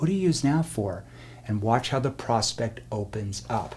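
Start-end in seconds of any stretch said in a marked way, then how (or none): 0.0-1.0 gentle, soft, serious, leaned-in tone. Coaching how to question a prospect, in a softer, more serious tone. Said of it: "lean in with more of a soft tone".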